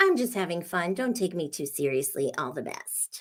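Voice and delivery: belittling, low micro penis voice. Reading aloud a commenter's follow-up message: mocking micro penis voice. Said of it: "in a micro penis voice".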